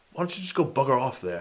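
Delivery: broad London cockney voice. Imagining a clash between two comic characters, voicing one: cockney accent. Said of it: "Some Cockney accent".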